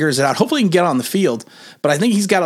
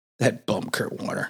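mocking, sarcastic, whispered; 7 semitones lower, 10 dB quieter than usual. Speaker credits a quarterback for a point, then adds a sarcastic jab. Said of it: "Warning, sarcasm".

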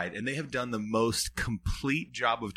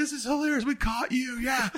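put-on, very high voice, laughing through the words; 14 semitones higher than usual. Recounting pulling in behind someone and catching him: retelling speaking while laughing. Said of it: "I'm laughing like".

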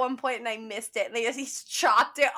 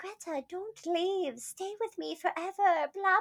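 put-on baby voice, much higher, quieter; 6 semitones higher, 8 dB quieter than usual. Recapping a film scene where Brahms speaks to Greta: Brahms's baby voice. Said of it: "he does the baby voice".

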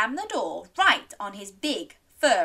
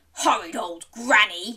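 growling, snarling storybook wolf voice. Narrator reading a picture book aloud, voicing the wolf: growling wolf voice. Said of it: "the wolf growled".

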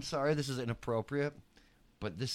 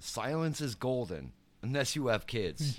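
ordinary talk, nothing marked

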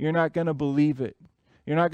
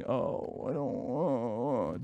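soft, slow, gentle fake whimper; 4 semitones lower, 9 dB quieter than usual. Imitating a two-and-a-half-year-old son refusing his vegetables, gentle fake whimpering. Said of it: "this gentle whimpering".

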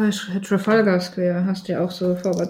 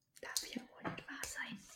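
quiet whisper, quieter. Reacting to the other speaker finishing a build first: whispering. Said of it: "Warum flüsterst du?".

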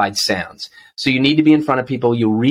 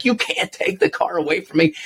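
put-on yell, much higher; 6 semitones higher, 3 dB quieter than usual. Speaker recalls yelling at her after she took away the car, retelling a yell. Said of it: "I'm yelling at her like".

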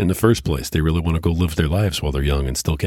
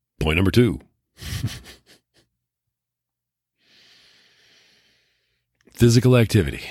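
voice catching, choked up, struggling to get words out; 3 semitones higher than usual. Speaker listing points on children's self-esteem, getting choked up thinking of their kids. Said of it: "I'm choking up over here right now".

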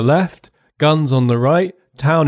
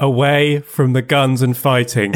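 plain

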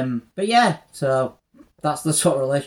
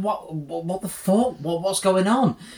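utterly stunned, dazed, stammering, shocked disbelief; 6 semitones higher than usual. Retelling waking up to find someone there: retelling own shocked reaction. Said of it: "the most shocked I've ever been".

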